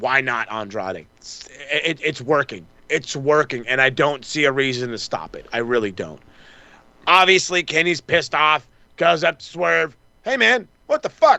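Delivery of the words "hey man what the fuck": easygoing, calm put-on voice, pitched very high. Recapping a wrestling segment where Kenny confronts Swerve, calm Kenny impression. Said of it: "And I love how Kenny's so calm".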